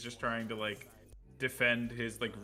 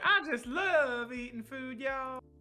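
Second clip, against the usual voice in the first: very high, loud, fake Southern accent; 14 semitones higher, 5 dB louder than usual. Trying out a new character's voice for the group, in a put-on southern accent. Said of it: "that's like Southern".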